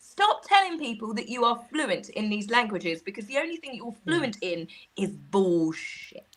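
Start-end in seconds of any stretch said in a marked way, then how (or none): none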